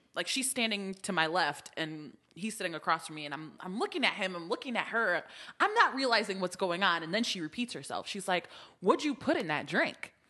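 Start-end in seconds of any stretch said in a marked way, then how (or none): 8.8-10.1 mimicked very serious tone with attitude. Retelling how a woman repeated her question, quoting her with attitude. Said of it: "With an attitude?".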